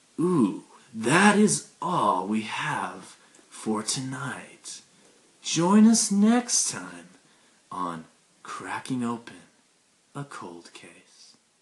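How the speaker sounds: slow, swooping true-crime narrator style, each word stretched. Signing off a true-crime episode in a Keith Morrison impression. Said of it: "in my best Keith Morrison impression".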